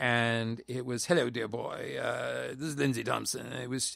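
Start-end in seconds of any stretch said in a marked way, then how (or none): 1.0-3.5 very put-on, growling British accent, quick. Retelling how Lindsay Thompson introduced himself, in a growly, very put-on British accent. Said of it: "a kind of a growly, very put on British accent".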